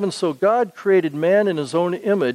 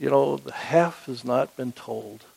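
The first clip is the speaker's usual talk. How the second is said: low, trembling, quivery, slightly creaky, emotional voice; 5 semitones lower, 5 dB quieter than usual. Quoting a man they remember, imitating his quivery, emotional voice. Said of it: "in his quivery, emotional voice".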